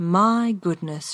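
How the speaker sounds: softly and gently spoken. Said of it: "she said softly".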